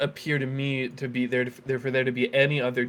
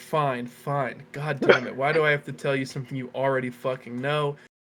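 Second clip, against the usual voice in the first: mock bitter, resentful tone. Asked to give a team breakdown on the show: mock bitterness. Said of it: "I'm just being, uh, bitter".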